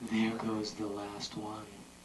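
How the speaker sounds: gentle, soothing, very soft and quiet tone. In a game of saying one line in each called-out manner: soothing.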